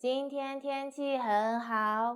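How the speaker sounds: flat monotone, every word even, no stress. Teaching sentence stress, an example with none: flat, no word stressed. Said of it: "See, I have no stress".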